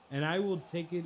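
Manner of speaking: usual speaking voice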